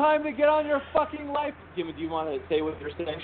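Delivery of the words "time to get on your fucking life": very high-pitched, shrill ranting yell. Retelling how Jen went off at people, imitating Jen's yell. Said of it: "And she was yelling".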